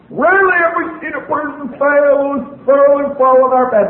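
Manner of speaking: high, carrying yell.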